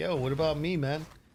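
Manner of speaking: voice of a house cat. Voicing the cat who wants attention during the stream: voicing Dorian the cat. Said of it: "He's like".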